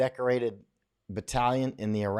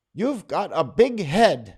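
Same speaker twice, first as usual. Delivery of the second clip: put-on little boy voice, high, loud Indonesian accent; 6 semitones higher, 5 dB louder than usual. Retelling what a little boy in Indonesia said, in his Indonesian accent. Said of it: "he says in his Indonesian accent".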